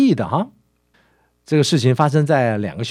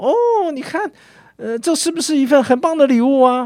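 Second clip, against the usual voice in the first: put-on very high, excited child's voice. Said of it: "他急着问道说".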